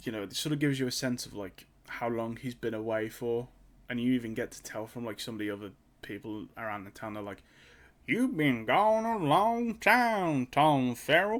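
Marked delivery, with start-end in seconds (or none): 8.1-11.4 very slow, high-pitched Appalachian drawl. Describing a show, the speaker imitates the townspeople in an appalachian accent. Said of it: "That's what they all sound like".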